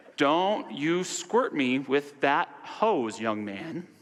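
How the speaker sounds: angry, stern delivery. Retelling a boy spraying a hose too close, imitating angry Mr. Rogers. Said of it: "you imagine an angry Mr. Rogers voice".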